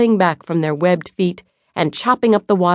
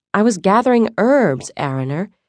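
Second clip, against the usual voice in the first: ordinary delivery, nothing marked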